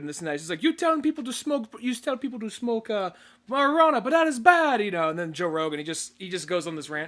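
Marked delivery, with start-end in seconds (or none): 0.6-5.1 bad put-on Brazilian accent, loud and high. Speaker retelling what a guy said to Joe Rogan, in a bad Brazilian accent. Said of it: "it was the accent that threw me off".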